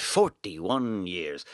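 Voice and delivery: fake Scottish accent. Repeating the number of years parents have been married: bad Scottish accent. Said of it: "Now I'm a bad Scottish accent".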